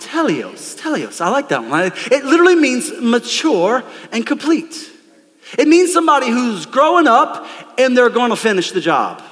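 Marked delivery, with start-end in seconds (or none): 0.0-1.2 soft, light English accent on "teleos". Leading a crowd in saying a greek word: little english accent. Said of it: "with a little English accent all together".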